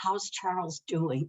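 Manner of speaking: careful, hushed, almost half-whispered voice. Retelling how acquaintances ask about charles: imitating someone almost half-whispering. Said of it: "almost in a whisper".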